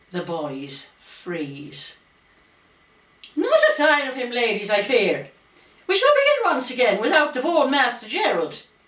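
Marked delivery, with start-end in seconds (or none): 3.4-8.7 sharp, swooping, high, raised, cutting, shrill, stern schoolmistress tone. Reading a woman's words to the ladies in the entrance hall: high-pitched voice. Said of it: "Her high-pitched voice cuts through the silence".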